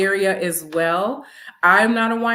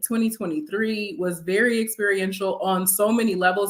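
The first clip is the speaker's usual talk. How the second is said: ordinary delivery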